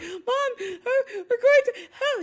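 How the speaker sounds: mock teary, slow little-kid pleading voice. Retelling running back to the car as a little kid, imitating her tearful kid self. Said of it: "by this time in tears".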